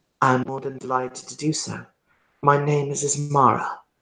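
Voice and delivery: put-on slight quiet Persian accent. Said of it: "very slight Persian accent".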